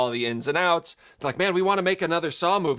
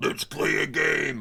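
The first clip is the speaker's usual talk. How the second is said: put-on muffled killer voice. Imitating the Jigsaw Killer's line: imitating the Jigsaw Killer's voice. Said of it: "the muffled Spiral Killer's voice".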